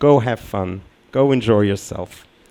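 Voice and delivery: ordinary talk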